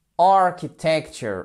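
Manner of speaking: architecture with first syllable ar hit hard. Explaining tonic accent in long words, stress on first syllable of architecture. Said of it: "accent tonique. Il tombe où sur la première syllabe?".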